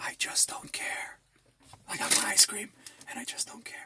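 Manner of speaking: hushed, breathy whisper, barely above breath. Eating ice cream, saying he doesn't care: whispering Joe Biden impression. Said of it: "I'm talking to you in a whisper".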